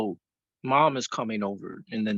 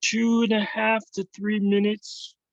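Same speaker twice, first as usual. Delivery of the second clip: very high, cartoonish puppet voice; 11 semitones higher than usual. Answering a quiz question from the host, in a Muppet voice. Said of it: "Why did you sound like a Muppet when you said that?".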